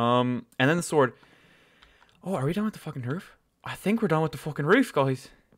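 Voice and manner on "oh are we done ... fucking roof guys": horrible, bad, fake Irish accent. Talking to the guys while building, in a horrible Irish accent. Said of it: "I just tried to do a horrible Irish accent".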